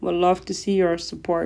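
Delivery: plain reading voice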